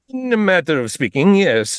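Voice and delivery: put-on shifts into an Italian accent. In a role-play, answering whether the navy is prepared, in an italian accent. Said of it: "I don't know why I sounded Italian there".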